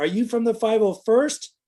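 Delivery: high, called-out yell. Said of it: "somebody kinda yelled out".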